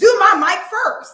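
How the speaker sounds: very loud screaming. Retelling one of the girls demanding her mic come off first: imitating someone screaming. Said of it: "screaming in my ear".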